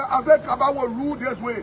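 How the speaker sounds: plain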